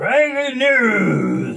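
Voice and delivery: put-on very slow, loud, booming announcer voice, drawn out. Imitating the other speaker's breaking news intro: imitating a big loud voice. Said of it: "in your big loud voice".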